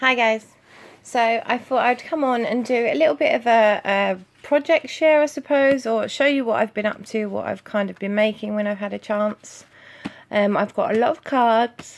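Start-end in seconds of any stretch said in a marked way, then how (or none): 10.6-12.0 speaking mid-yawn, higher and louder. Sharing a craft project with viewers, speaking while yawning. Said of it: "excuse me, yawning".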